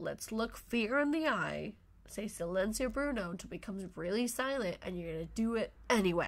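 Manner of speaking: normal talking voice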